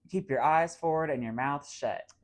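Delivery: ordinary talk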